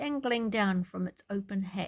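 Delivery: plain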